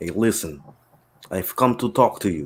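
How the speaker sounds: put-on Russian accent. Joking after asking if anyone has one: put-on Russian accent. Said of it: "nobody got a Russian accent?".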